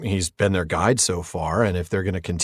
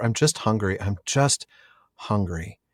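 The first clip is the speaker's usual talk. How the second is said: soft, quiet, pitiful whine. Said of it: "for a poor creature".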